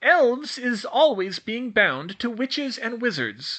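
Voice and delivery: condescending teacher-like voice. A narrator reads the elf Tilly explaining to Hermione, in a patronizing teacher's tone. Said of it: "in her patronizing teacher's tone".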